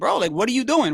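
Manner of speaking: imitated light yelling call. Retelling a trainer scolding a fighter late in a fight: imitating a coach yelling. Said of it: "he's yelling at her".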